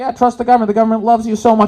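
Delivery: loud, very high, mocking sarcastic tone. Recalling what he said on the news in Canada; retelling a sarcastic remark. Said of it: "being sarcastic".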